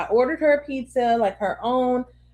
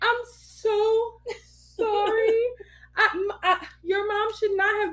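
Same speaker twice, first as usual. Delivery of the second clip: put-on tearful sobbing voice, pitched high; 10 semitones higher, 4 dB quieter than usual. Retelling breaking down after a pizza fight with her child, imitating a tearful apology. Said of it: "I'm crying".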